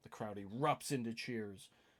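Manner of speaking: normal talking voice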